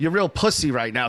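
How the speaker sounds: ordinary delivery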